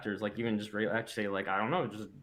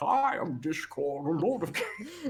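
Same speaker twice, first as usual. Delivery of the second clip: put-on Scottish accent, higher pitch; 7 semitones higher than usual. Retelling an early attempt at voicing Discord: Sean Connery voice. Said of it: "we talk like Sean Connery, like this".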